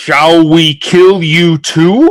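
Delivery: great, loud, high bellowing call. A helm buried in the ground of Avernus speaks, bellowing voice. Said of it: "bellowing voice emanate".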